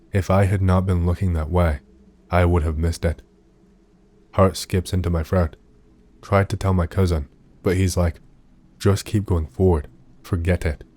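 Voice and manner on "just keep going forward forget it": plain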